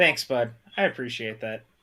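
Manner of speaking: dripping with heavy, thick sarcasm. Answering a friend's teasing put-down: heavy sarcasm. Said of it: "That was a heavy sarcasm".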